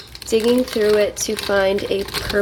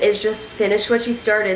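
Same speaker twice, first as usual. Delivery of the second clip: plain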